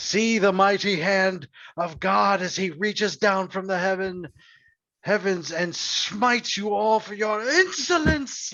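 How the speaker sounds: high, ranting, proclaiming preacher voice like a sermon. Voicing Father Thomas casting a spell: character shouting a divine threat. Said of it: "Father Thomas just shouts and he's like".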